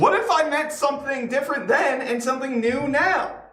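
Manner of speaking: pitch pushed very high. Answer someone who says that is clearly not what you meant, with a very Jerry Seinfeld inflection. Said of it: "a very Jerry Seinfeld inflection".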